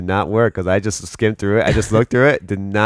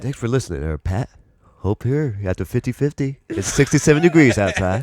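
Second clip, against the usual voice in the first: put-on radio announcer voice with DJ patter; 3 semitones higher than usual. Thanking a fan-mail sender for listening, in a radio announcer voice. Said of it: "Do do a little radio voice".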